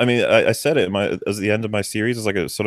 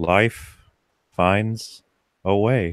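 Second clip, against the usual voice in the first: very slow, with every word drawn out. Quoting a movie trailer line: Jeff Goldblum impression. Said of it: "they've got Jeff Goldblum going".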